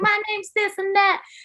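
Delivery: put-on squeaky, high little Texan Southern girl voice. Quoting a little girl introducing herself, in a squeaky Southern Texan girl voice. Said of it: "real squeaky voice having little girl".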